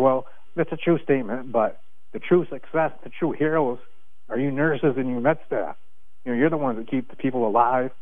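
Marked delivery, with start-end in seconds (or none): none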